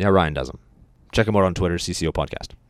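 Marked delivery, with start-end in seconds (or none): 1.1-2.5 fast monotone radio-announcer voice, much lower pitch. Plugging someone's Twitter on the podcast, in a fast monotone radio voice. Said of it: "You sounded like an actual radio guy, how you said that real fast and monotone".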